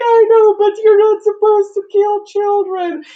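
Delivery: put-on high, loud, weeping old mother voice.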